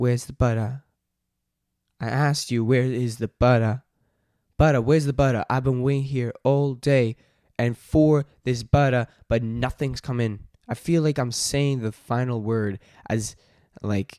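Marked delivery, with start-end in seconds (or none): 0.0-10.4 loud, put-on attempted Australian accent. Practicing a bit about the butter, in an attempted australian accent. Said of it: "in the quote unquote Australian accent".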